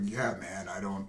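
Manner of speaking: deadpan, very low, flat mutter. Pitching Ron Perlman as the lead in Wolf Cop, the speaker imitates Ron Perlman's deadpan. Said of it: "deadpan delivery that he always does".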